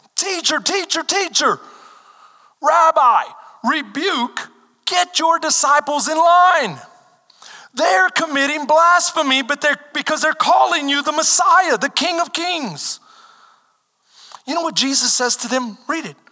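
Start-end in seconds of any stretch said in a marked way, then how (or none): 0.2-13.0 acted, insistent, high-pitched yelling. Retelling how the Pharisees called to Jesus from the crowd: imitating Pharisees yelling. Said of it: "So they're yelling at him".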